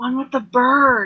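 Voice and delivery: in a whisper. Voicing a character who leans in and speaks to him: whispering. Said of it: "and then she whispers to him".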